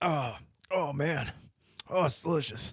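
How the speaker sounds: pained, strained, forced put-on tone. Retelling a man eating the food and grabbing water, acting out him dying on it. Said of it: "he's like clearly dying on it".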